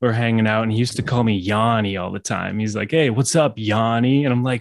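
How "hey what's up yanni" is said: laid-back cool-bro California voice. Recalling how a friend greeted him when high: Douglas's stoner voice. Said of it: "This is his stoner voice".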